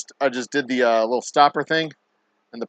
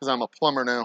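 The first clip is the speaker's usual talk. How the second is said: ordinary delivery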